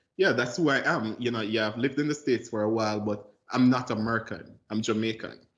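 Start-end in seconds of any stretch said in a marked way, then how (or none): none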